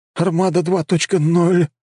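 quavering, trembling voice, pitched very high. A student answers the other man's question: trembling voice. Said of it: "дрожащим голосом ответил ученик".

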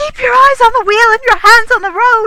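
very high, shrill, piercing shriek. A woman yells at the man at the wheel, screaming. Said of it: "Lady Barbara screamed".

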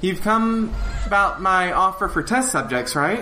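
high, eager, excitable little gnome voice. A gnome who has opened her door speaks to the visitors, gnome voice. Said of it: "and there is a gnome that is standing in front of you. / She looks up and says".

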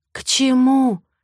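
afraid, whispering. Narrator reads a wife questioning her husband, fearful whisper. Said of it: "Спрашиваю шепотом".

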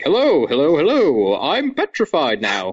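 high-pitched, swooping, drawn-out delivery. Joking about a film actor having little to do, imitating him: John Cleese impression. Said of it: "just the great John Cleese to be there to basically be like".

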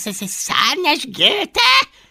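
affronted tone. A dragon reacts to another's insult, indignant. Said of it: "Méltatlankodott Fogatlan".

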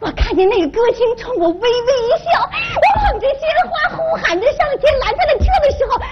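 tearful, overjoyed rapture.

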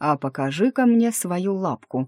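ordinary delivery, nothing marked

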